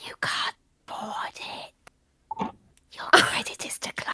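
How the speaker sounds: stealthy, sneaky whisper. A player's character sneaks up behind Wylas: sneaky whisper. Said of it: "just very sneaky and just whisper".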